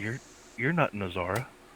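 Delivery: very soft, gentle, soft-spoken voice. Narrating a scene, the speaker voices a confused man addressing the listener: real soft voice. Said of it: "he says in a real soft voice".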